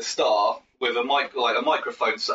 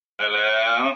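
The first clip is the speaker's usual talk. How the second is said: eerie, ghoulish, creepy voice. Doing an impersonation of Steve, a creepy bandmate, saying hello. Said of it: "an impersonation of him saying hello".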